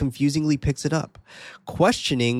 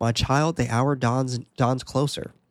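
usual speaking voice

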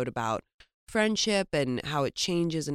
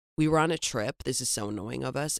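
plain

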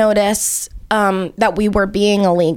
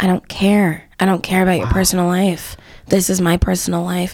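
whisper, much lower; 3 semitones lower than usual. Describing customers begging him not to shut off their oil, retelling a whisper in the ear. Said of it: "And I whisper in their ear".

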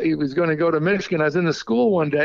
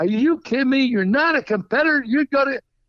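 high-pitched, screaming tirade; 8 semitones higher than usual. Retelling a coach attacking a player: retelling a scream. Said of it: "screaming at him".

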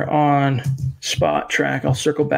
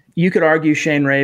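usual speaking voice

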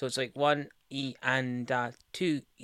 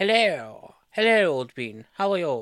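loud, high, stupid put-on silly voice; 5 semitones higher, 8 dB louder than usual. Guest back on the show, answering the host's greeting in a stupid put-on voice. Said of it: "speaking in that stupid voice".

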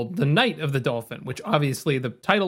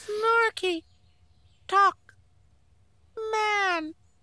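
squeaky, very high-pitched broken English. Retelling how a man at a podium spoke, in high-pitched broken English. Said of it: "Speaking in broken English with like a very high-pitched voice".

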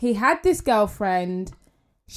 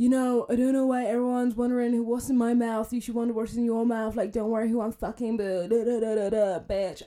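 mimicked scary man's voice, quieter; 5 dB quieter than usual. Retelling what a man said in his online story: imitating a scary-voiced man. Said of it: "he's like Voldemort two point oh".

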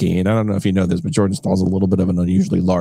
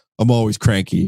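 ordinary talk, nothing marked

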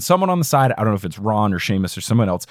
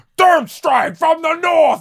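put-on angry voice, higher; 3 dB louder than usual. Mocking how the new actor plays a scene: imitating angry Dumbledore. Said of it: "He's so angry for everything".

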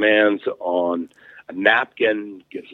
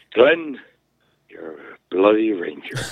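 put-on Irish brogue. Retelling what a man's mother told him, imitating an Irish brogue. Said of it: "in her Irish brogue".

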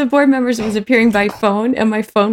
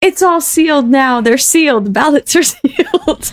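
mock agitated old man voice, insistent and worked up; 4 semitones higher than usual. Retelling an election meeting where an old man taped the ballot box: imitating a man screaming. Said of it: "started screaming".

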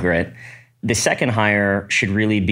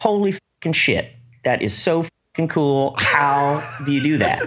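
put-on high, rough, butchered Midwestern American accent; 6 semitones higher than usual. Retelling what a customer said during a software demo: imitating a Midwest HR woman's accent. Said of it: "I'm probably butchering her accent".

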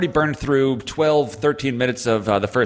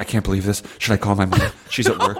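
mock out-of-breath panting while talking, lower pitch; 5 semitones lower than usual. Retelling a player's words after finishing the run: imitating being out of breath. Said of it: "he was just absolutely out of breath".

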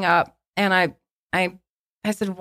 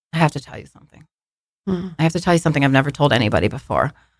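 lower-pitched, put-on stoic tone; 6 semitones lower than usual. Retelling a confrontation where he turned stoic, imitating a stoic tone. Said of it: "he gets very stoic".

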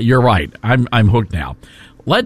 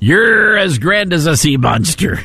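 lovestruck, romantic pirate voice, higher; 6 semitones higher than usual. Adding one more line to a valentine to New York: romantic pirate voice. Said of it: "Very romantic pirate".

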